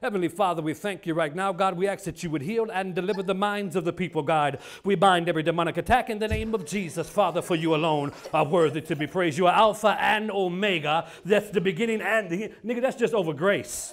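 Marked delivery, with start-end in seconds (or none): none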